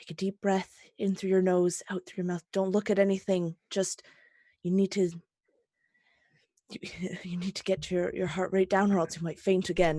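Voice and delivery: very low, nurse-like voice. Guiding someone to breathe so they won't faint again, full nurse mode. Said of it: "he's in like full nurse mode".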